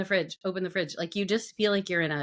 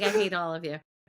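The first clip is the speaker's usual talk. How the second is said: ordinary talk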